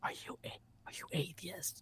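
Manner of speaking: confiding, hushed, barely voiced whisper. Retelling how a sister asked a question: imitating sister whispering. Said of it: "and she whispered it".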